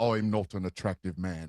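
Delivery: deep, soft, mock modest voice.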